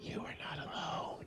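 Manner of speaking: hushed, very quiet, breathy whisper under the breath. Retelling what was said to a Superman fan he worked with: whispering. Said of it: "I would just whisper".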